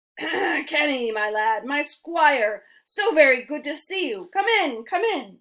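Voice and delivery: rough yet lively, gravelly, drawn-out old badger voice. Reading a story aloud, voicing an elderly badger welcoming a boy: gravelly yet spirited voice. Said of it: "he spoke in a gravelly yet spirited voice".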